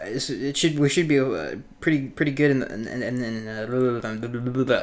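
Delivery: stumbling over words slowly. Giving a news rundown, stuttering over words. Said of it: "sorry, over here stuttering".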